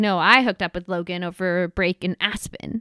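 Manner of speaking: ordinary talk, nothing marked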